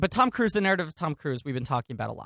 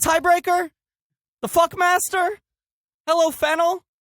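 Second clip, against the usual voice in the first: very high-pitched, loud yelling; 8 dB louder than usual. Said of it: "you're yelling a lot".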